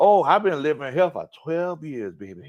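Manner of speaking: put-on very strong New Orleans accent. Retelling a woman's answer about why she sounds like that, imitating a heavy New Orleans accent. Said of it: "she had the heaviest New Orleans accent".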